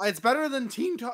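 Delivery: voice cracking and breaking. Joking with another speaker while comparing video titles, voice cracking. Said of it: "voice crack!".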